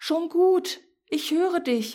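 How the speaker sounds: very high, tiny, squeaky little mouse voice. The little mouse answers someone calling for help from inside; little mouse squeaking. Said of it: "piepste die kleine Maus".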